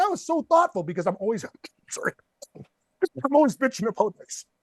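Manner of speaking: choked-up voice catching with emotion. Speaker thanks Pat for a gift, choking up. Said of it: "Oh man, I'm choking up".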